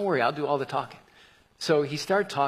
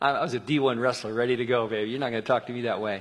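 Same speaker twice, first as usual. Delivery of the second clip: normal talking voice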